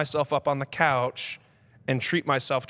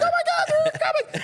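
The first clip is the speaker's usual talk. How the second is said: mock screeching cry, very high and shrill; 3 dB louder than usual. Retelling playing zombies at night, imitating his own screeching.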